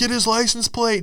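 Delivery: play-acted, very high, desperate yell. Retelling a street crash, quoting the cyclist calling out after the car left: retelling a yell for help. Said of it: "he's yelling for help".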